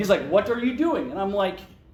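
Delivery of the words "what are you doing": put-on Eastern European accent, pitched up. Retelling how the boss would come into the booth, imitating an Eastern European accent. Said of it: "That's my best Eastern European accent".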